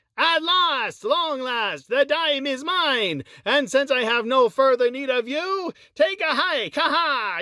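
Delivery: cartoonish duck voice. Trying out impressions, the speaker attempts a Scrooge McDuck voice. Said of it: "Let's see if I can get a, an Uncle uh, Scrooge McDuck going".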